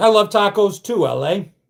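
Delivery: plain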